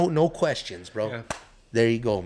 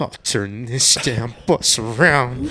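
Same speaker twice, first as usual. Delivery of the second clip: slow, drawn-out, fuming, fed-up voice at its limit. Comparing an angry worker to a bus driver: Chris Farley bus driver impression. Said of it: "reminds me kinda like a Chris Farley driving the bus".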